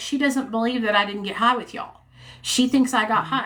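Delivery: normal talking voice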